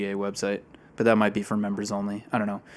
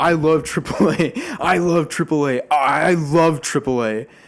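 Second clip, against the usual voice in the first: loud, high, insistent shout, repeated over and over; 7 semitones higher, 7 dB louder than usual. Retelling a man across the table whom no one answers, imitating someone shouting. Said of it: "he just says".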